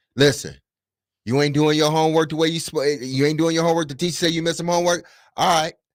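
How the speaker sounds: firm, blunt, direct delivery, very high-pitched. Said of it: "more direct and firm".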